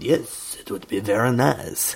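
slow, put-on old French man voice. Imitating a french girl accepting an invitation: imitating a fifty-year-old french man's voice. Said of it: "she had the voice of a fifty-year-old French man".

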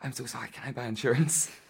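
panting, out of breath. Retelling running up from half a mile away, acting out being out of breath. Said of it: "like all out of breath".

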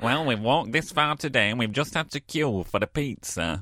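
put-on nasal voice. Retelling a text exchange, the speaker acts out the dad's reply in a nasal voice. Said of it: "I always do an impression of my dad with a nasal voice".

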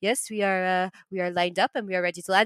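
put-on French accent. Speaker acting out a French dude's reply in an argument: French accent. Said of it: "I nailed the accent".

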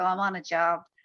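casual, tossed-off tradesman-like delivery. Retelling what the actor said when asked why he was there: imitating Colin Farrell's way of talking. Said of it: "but he'd be like".

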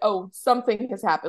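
ordinary delivery

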